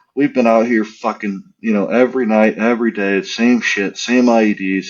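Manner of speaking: usual speaking voice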